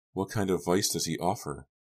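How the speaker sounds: ordinary delivery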